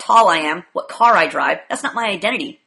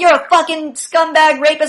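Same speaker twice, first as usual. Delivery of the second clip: raised yelling, higher and louder; 8 semitones higher, 6 dB louder than usual. Retelling what a protester in a video shouted: imitating someone yelling. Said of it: "she's yelling".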